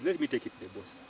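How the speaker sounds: normal talking voice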